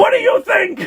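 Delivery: scary, shrill, very high yell. Speaker retells Rachel's reply to Harriet, imitating Rachel's shrill yell. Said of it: "Shrill voice".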